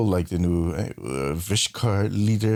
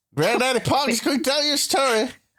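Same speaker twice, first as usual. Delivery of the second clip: fake Australian accent, much higher pitch. Asked to tell a story like a granddad in a rocking chair; put-on Australian accent. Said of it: "a Belgian man doing an Australian accent".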